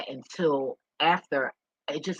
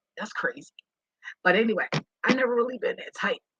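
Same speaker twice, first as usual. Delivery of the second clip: on the edge of tears, choked-up, teary, pitched up; 6 semitones higher, 4 dB quieter than usual. Talking about helping neighbors, about to cry. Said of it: "I'm about to cry about that".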